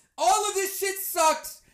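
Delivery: ordinary delivery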